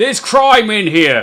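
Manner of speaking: loud, high, drawn-out shout. Narrating a man behind the bar who leans out, shouting towards the door. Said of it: "shouts towards the door".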